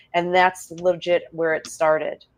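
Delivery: ordinary talk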